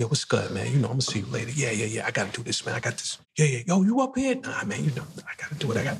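relaxed, casual street-slang banter. Retelling greeting a friend from the neighborhood: imitating his code-switched street talk. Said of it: "So I would code switch".

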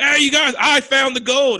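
high, hollered-out yelling. Telling a story about a man in the woods calling to the others, retelling a yell. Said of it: "And he's yelling it out".

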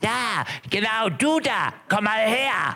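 very high, squawky, croaky parrot voice. Narrating a story, voicing a parrot calling to a man, croaky parrot voice. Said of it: "folgende krächzende Stimme hört".

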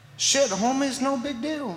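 put-on slangy dude voice.

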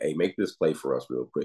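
ordinary talk, nothing marked

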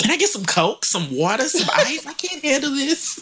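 very high-pitched, play-acted, grossed-out, disgusted tone. Retelling a TV cast member tasting strong liquor: imitating Brent, disgusted. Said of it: "She was so disgusted".

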